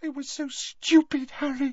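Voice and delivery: high-pitched whispered voice. Reading a story aloud, Hermione answers Harry in a high-pitched whisper. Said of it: "said Hermione in a high-pitched whisper".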